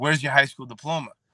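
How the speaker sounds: mock detective voice, harsh scolding tone, then a scream. Retelling a detective at an interview screaming at them, retelling a scream. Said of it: "this lady's screaming at me".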